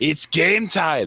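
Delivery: very high, shrill, shouted call. Ducking back out into the pipes to call the others in: yelling. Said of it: "and I just yell out".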